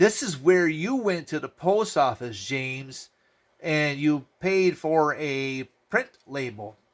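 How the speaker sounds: slow, carefully spelled-out explanatory delivery. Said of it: "let me see how we could put this in layman's terms".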